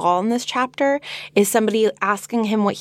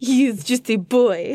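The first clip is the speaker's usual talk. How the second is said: slight put-on French accent, higher pitch; 3 semitones higher than usual. Asked to keep the voice, repeating the line: little French accent. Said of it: "Can we do the rest of the episode with this".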